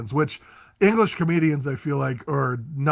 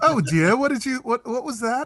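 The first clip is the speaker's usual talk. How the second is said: put-on very high-pitched English accent; 9 semitones higher than usual. Showing how he'd talk to his wife when she annoys him, in an english accent. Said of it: "I'm going to speak in an English accent".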